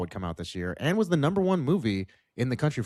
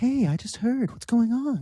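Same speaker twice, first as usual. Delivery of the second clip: very high-pitched, sweet, concerned, extra-nice voice; 12 semitones higher than usual. Describing how a man in the story talks when being nice, imitating his nice Woody Allen-style voice. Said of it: "he's doing like his very nice voice".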